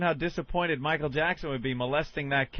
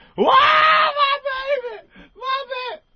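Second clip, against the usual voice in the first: very high, very loud, slow drawn-out wailing, acted out; 8 dB louder than usual. Retelling how the music coach reacted on hearing the news: imitating someone crying and wailing. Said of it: "She starts crying like".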